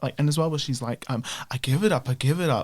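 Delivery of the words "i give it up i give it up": imitated sarcastic delivery. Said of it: "she's very, very sarcastic".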